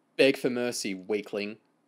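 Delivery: ordinary delivery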